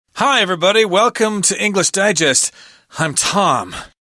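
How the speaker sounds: high, pained voice. Opening an English lesson video, the host greets everybody in a pained voice. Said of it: "You sound like you're in pain".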